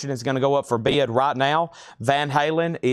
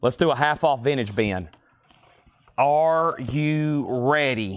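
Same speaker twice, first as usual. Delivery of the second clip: plain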